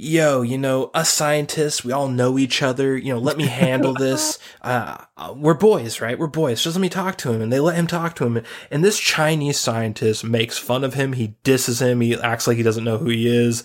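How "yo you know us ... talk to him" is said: brash, puffed-up, all-front bravado. Retelling a movie scene where a scientist offers to handle the call: imitating John Malkovich acting all front. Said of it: "John Malkovich is all front and like".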